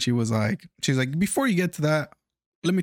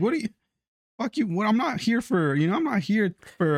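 high, rude, dismissive, scornful tone; 7 semitones higher than usual. Telling about a woman whose story the speaker ignored, retelling a rude brush-off. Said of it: "I was just like".

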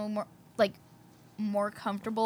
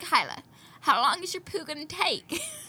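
hokey put-on country accent, pitched up; 6 semitones higher than usual. Retelling asking a friend how long she'd be, in a country accent. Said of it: "She just went like a country accent".

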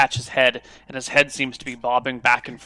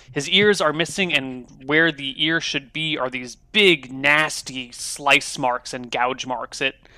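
normal talking voice

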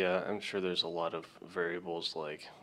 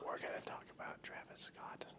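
very quiet, soft, fake hushed ASMR whisper. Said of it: "with the soft whispers".

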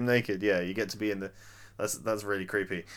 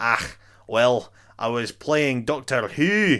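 put-on easy, conversational Scottish accent; 4 dB louder than usual. Acting out a house owner's reply in an imagined chat: David Tennant Scottish impression. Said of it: "That's my fantastic Scottish impression".

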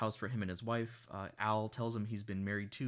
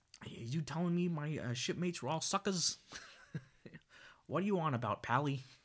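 put-on thick Boston accent, pitched up; 6 semitones higher than usual. Recapping a film scene, voicing a character's line, heavy Boston accent. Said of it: "heavy Boston accent".

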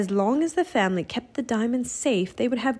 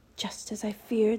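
quiet, soft, hushed voice; 5 dB quieter than usual. Reading a story aloud, a character confirms a fear: hushed voice. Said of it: "said Teddy in a hushed voice".

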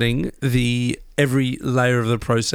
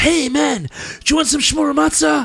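weird put-on American accent, pitched up; 14 semitones higher than usual. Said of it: "they always talk with this kind of weird, kind of American accent. They go".

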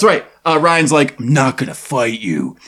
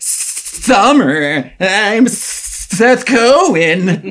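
put-on snake voice, much higher and slower; 5 semitones higher than usual. Acting out a suggested scene, the speaker plays Seth Cohen greeting Summer, Disney snake voice. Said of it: "I'm doing like a Disney, like a snake voice".

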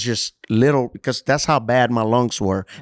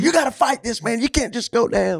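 very high, urgent, in-your-face yell; 11 semitones higher than usual. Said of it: "he was all at my face".

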